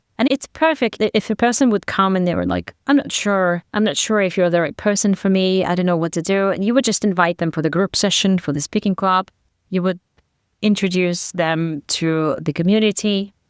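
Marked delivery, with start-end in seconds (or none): none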